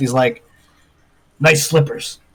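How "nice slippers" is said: quiet mumbling under the breath. Voicing a character leaving a room, mumbling under his breath.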